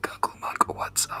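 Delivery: whispering. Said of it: "I whisper it to see if he".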